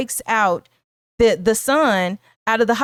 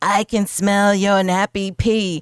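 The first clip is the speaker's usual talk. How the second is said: terrible put-on horror-movie demon-like voice. Retelling a scene from an exorcism movie, in a terrible demon-like voice. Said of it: "terrible demon-like voice".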